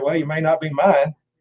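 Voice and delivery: bone-dry, flat, level deadpan delivery. Retelling what the dad said in reply: imitating a deadpan delivery. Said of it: "just deadpan said".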